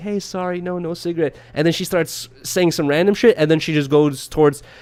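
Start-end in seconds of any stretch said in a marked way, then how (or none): 0.0-1.4 put-on smiling, friendly tone, quieter. Retelling a man telling a woman he has no cigarette, retelling a smiling apology. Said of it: "smiling to her, apologizing like".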